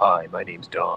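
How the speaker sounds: put-on movie trailer announcer voice. Retelling how the man introduced himself to someone who recognized his voice, Don the movie previews guy voice. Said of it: "the movie previews guy".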